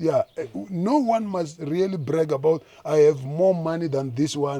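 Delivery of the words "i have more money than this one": ordinary delivery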